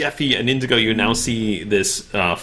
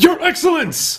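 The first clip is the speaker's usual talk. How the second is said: very high-pitched, shouted call. Voicing a fighter calling toward an old man sliding across the ground: shouting in character. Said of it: "he shouts".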